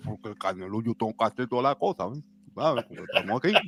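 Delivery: very low mumble, as if marbles in mouth. Mocking a boxer's speech: David Morrell impression, marbles in mouth. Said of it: "William Skull talked just like that".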